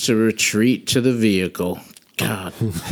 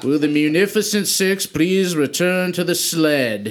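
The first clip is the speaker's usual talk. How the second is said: magically booming voice, "sled" drawn out; 7 semitones higher than usual. Using thaumaturgy to make their voice boom, a character calls out: booming voice. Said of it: "make my voice boom".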